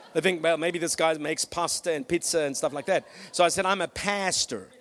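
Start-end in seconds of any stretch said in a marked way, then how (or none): 3.6-4.6 heavily exaggerated, most American-sounding accent possible. Retelling telling a woman he is a pastor, in an exaggerated American accent. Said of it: "In my most American accent that I could find".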